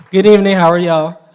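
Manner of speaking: shouting. Greeting the audience on receiving a scholarship, yelling. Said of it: "Am I yelling?".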